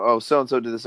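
normal talking voice

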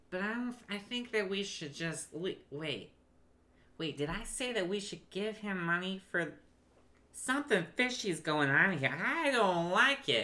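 high-pitched put-on voice. Narrating a game scene, voicing one of two large men snapping out of it, high voice. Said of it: "The man crossing his arm is probably bigger. / and you see two large men. / The man crossing his arms is still just looking at the wagon, / is the one that had the high voice? The high voice one".

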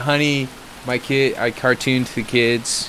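ordinary delivery

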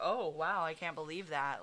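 ordinary talk, nothing marked

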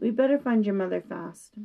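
plain

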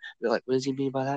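hushed whisper. Retelling what he whispered to the speaker, whispering. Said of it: "He would whisper to me".

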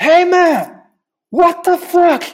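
mock very high, stretched-out yelling. Retelling how a security guard shouted at the speaker, retelling a yell. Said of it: "Gritando comigo".

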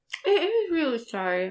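talking with a full mouth. A podcaster mid-snack apologizes to the co-host, mouth full of candy cane. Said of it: "My mouth is full of candy cane now".

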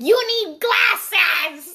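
mock, high, loud scolding scream. Retelling how she reacted when the speaker read something wrong, imitating someone screaming. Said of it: "she was screaming at me".

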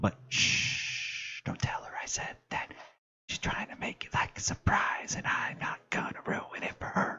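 secretive, hushed whisper. A speaker vamping while she is away tells Tim her secret, whispering. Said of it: "I don't know why I'm whispering now".

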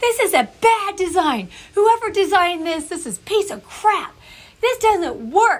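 put-on very high, furious ranting yell. Recalling getting frustrated with a hard-to-figure-out design: retelling an angry yell. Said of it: "and I'm yelling".

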